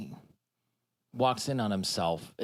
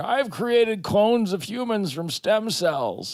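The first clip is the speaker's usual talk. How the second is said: high, slow, proclaiming mad-scientist voice. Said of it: "some rogue scientist who's like".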